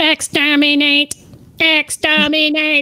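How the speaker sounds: put-on sci-fi monster voice. Repeating the line after saying it was a good Dalek impression: Dalek voice. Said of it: "I did such a good Dalek impression".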